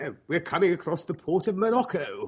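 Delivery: put-on fake British accent. Co-hosts imagining a British figure in their story: put-on British accent. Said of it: "British who's like".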